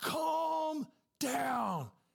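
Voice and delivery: high scream, calm and drawn out. Retelling a turbulent flight, quoting the flight attendant, imitating someone screaming. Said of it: "The flight attendant started screaming".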